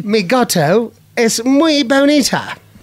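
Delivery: Spanish with British accent. Showing the kids' challenge: speaking Spanish with a British accent. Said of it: "Spanish with a British accent".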